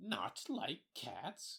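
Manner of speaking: piercing, shrill, impassioned outburst. Reading the Mouse answering Alice, in a shrill, passionate voice. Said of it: "in a shrill, passionate voice".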